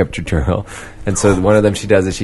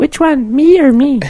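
very high, loud fake woman's voice from a man; 5 dB louder than usual. Answering a question meant for Katie: man's put-on female voice. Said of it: "It's my best male female voice".

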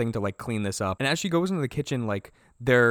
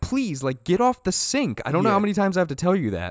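put-on shouted scolding yell; 6 semitones higher, 3 dB louder than usual. Retelling how she yelled at the people at the sink, retelling a yell. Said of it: "she's yelling at those people at the sink".

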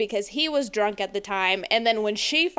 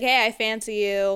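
imitated slurred drunken speech. Retelling a movie scene where she tells him: imitating drunken speech. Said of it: "she's drunkenly telling to him".

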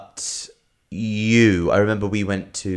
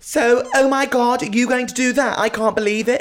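put-on very high-pitched, ditzy airhead young woman voice; 3 dB louder than usual. Mocking how men do their girlfriend's voice on stage: mock girlfriend voice. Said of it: "a man is doing their girlfriend's voice on stage".

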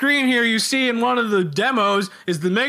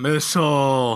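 exhausted, worn-out announcer voice with zero energy; 9 semitones lower than usual. Imitating a game's voiceover actor: imitating an exhausted voiceover. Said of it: "the voiceover sounds like he's fucking exhausted".

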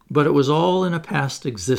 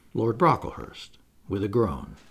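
usual speaking voice

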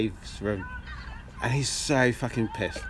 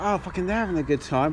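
ordinary talk, nothing marked

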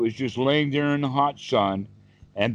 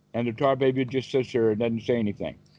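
plain reading voice

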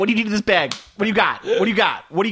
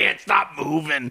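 put-on puppet creature voice, lower and quieter; 4 semitones lower, 4 dB quieter than usual. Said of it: "Snuffleupagus who talks like this".

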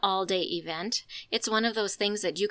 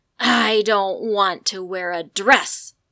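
very loud, slow, dragged-out snarling growl; 8 dB louder than usual. Retelling her three-and-a-half-year-old daughter at breakfast: retelling a child's growl. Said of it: "growled at me".

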